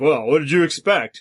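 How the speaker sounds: mocking put-on voice. Answering critics by voicing a strawman of them, in a mocking strawman voice. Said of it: "Strawman, I am doing a voice of".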